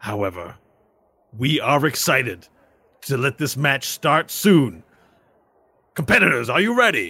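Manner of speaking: arena match announcer delivery. As the match caster, speaking to the audience before the match: match caster announcing. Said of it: "I'm [name], and I'm going to be your caster for this particular match".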